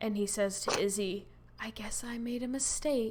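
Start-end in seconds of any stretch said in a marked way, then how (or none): 1.6-3.1 soft, hushed whisper. Retelling a line said right after being put up: imitating a whisper. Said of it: "starts speaking in a whisper".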